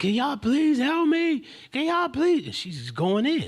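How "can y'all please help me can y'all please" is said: acted, very high, hysterical, tearful crying voice. Retelling a young girl who came up in tears asking for help, imitating hysterical crying. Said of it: "She's in hysterics".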